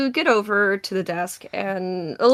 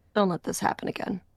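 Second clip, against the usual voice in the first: whispering, quieter; 6 dB quieter than usual. Voicing a familiar voice that warns a player's character: whispering in your ear. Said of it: "whispering in your ear".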